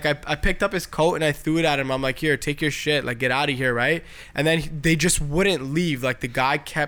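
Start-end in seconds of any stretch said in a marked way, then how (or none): none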